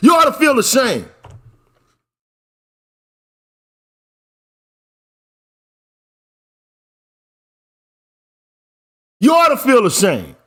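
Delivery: furious scolding voice. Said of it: "don't tone police me".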